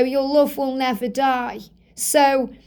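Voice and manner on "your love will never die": ordinary talk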